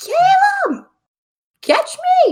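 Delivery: shrill, very high, very loud shouted call. Voicing the character Sari as she runs straight at Calem, yelling. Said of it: "just yells".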